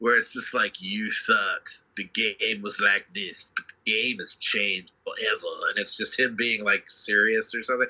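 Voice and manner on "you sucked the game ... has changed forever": put-on low, slow drawl in a bayou accent. Imitating a movie trailer narrator: Bayou Princess and the Frog voice. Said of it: "a Bayou Princess and the Frog voice".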